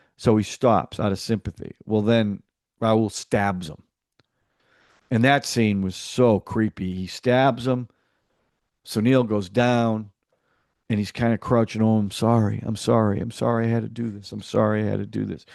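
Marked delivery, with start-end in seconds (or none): 11.8-15.5 mock sympathetic, apologetic tone. Retelling a film scene after a stabbing: imitating a sympathetic tone. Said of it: "really sympathetic".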